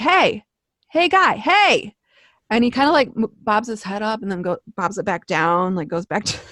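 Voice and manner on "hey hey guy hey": slow, high, very drawn-out calling yell. Retelling yelling at a passed-out guy through a window: retelling a yell. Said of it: "And I'm like yelling".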